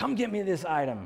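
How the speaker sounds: high, commanding general's bark. Retelling an elderly lady asking the speaker for an item, imitating barking orders. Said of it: "barking orders at me like she's the general".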